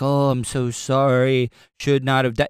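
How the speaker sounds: put-on robot-like voice. Retelling someone's video apology: imitating a robotic apology. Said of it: "He sounded like a robot".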